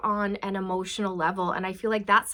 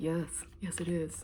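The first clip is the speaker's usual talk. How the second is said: very quiet, hushed put-on man's voice; 4 semitones lower, 10 dB quieter than usual. Acting out a dog owner met on a trail, answering in a put-on man voice. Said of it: "That's my man voice".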